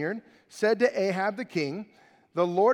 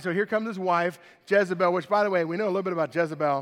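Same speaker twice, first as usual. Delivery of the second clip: usual speaking voice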